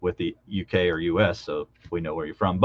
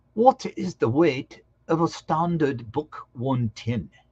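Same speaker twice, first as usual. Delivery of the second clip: put-on British accent, pitched up; 8 semitones higher, 3 dB quieter than usual. Reading a quiz question aloud in a fake British accent. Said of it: "Let's try my just my fake British accent".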